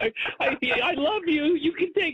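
very high, pleading crybaby whine.

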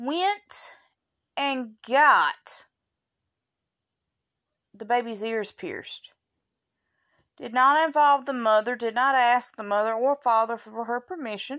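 furious, indignant, boiling with anger. Recounting a mother-in-law piercing a baby's ears without permission: furious. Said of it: "I'm so mad I can't speak".

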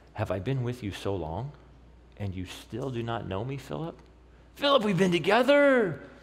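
a little frustrated and mildly exasperated. Speaker acting out Jesus' reply to Philip, mock-exasperated. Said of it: "with a little exasperation in his voice".

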